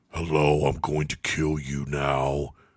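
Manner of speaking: deep, low masked-hero voice, dropped way down. Mocking how an actor talks in a movie, Batman voice. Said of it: "He talks like Batman".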